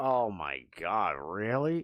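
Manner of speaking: very slow, fed-up, exasperated tone of disbelief. Retelling how someone reacted to an invitation to hang out: imitating someone's exasperated reaction. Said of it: "I could hear it in his voice".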